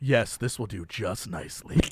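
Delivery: very low, flat, unsettling, creepy deadpan delivery. Retelling a Tom Brady commercial, imitating Tom Brady, creepy. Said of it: "creepiest way possible".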